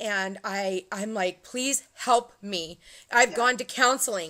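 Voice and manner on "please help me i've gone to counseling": put-on hysterical crying. Retelling a call to a psychic lady, imitating hysterical crying. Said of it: "and I'm crying, I'm hysterical".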